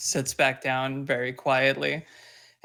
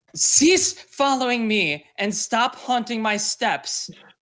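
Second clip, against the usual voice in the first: shrill, high, furious angry yell; 9 semitones higher, 5 dB louder than usual. A character slams her fists on the table and yells directly at the owl. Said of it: "and yells directly at the owl".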